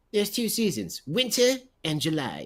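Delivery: terrible cartoon voice, swooping and sing-song. Quoting a South Park line about Colorado: terrible Cartman impersonation. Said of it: "my terrible, uh, Cartman impersonation".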